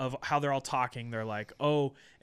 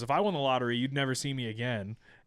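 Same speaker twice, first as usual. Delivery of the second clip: put-on flat deadpan delivery. Recapping a scene for the other speaker, Vanessa's mock-deadpan line. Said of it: "when she comes into it all deadpan".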